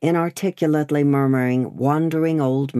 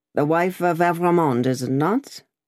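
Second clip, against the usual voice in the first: ordinary delivery, nothing marked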